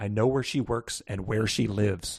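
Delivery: hushed, half-whispered stage whisper. Recounting a phone call in which a man speaks, retelling a half-whisper. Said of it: "he whispers into the phone".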